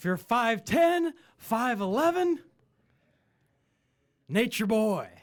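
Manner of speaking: bad showman bellow, very loud, high yell. Saying what kind of girl suits Flair: terrible Ric Flair impression. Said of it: "That was a terrible Flair".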